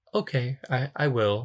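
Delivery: slow, robot-like delivery. Retelling a film scene, answering the mom: robotic Georgina voice. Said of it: "Georgina's talking very kinda robotic".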